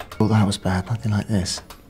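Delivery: said very quietly. Answering a question about when a relationship ended: said very quietly. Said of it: "said very quietly".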